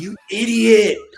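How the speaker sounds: very high, shrill scream. Retelling how he screamed at a kid in fifth grade, retelling a scream. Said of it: "And I screamed at him".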